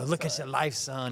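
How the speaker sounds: plain, straight-talking coach voice. Recalling what a coach used to tell him: imitating Coach Maxson. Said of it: "that's his voice of Coach Maxson".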